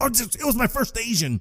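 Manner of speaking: mock very high, way-too-loud blurted speech. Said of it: "He says that way too loud".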